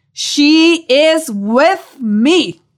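mock booming, thunderous, very slow, proclaiming voice. Imagining arriving in heaven, Jesus in a thunderous voice. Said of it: "in a thunderous voice reply".

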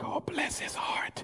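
hushed, breathy whisper under the breath. Describing people in the room whispering to themselves about someone, retelling a whisper. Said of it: "they're whispering to themselves like".

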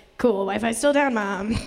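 ordinary talk, nothing marked

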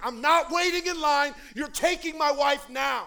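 very loud, high-pitched demanding scream. Speaker retells demanding help for his wife in the emergency room: retelling a scream. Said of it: "I start screaming".

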